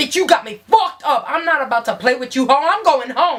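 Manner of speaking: put-on angry, heated rant. Retelling going off at a friend in a hotel room: retelling own angry rant. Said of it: "I start going off".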